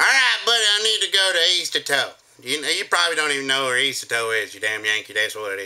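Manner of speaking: put-on local North Carolina accent. Recalling a man who called in, the speaker does his north carolina accent. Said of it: "this one guy called in and goes".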